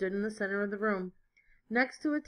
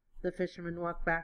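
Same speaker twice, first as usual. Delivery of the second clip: plain reading voice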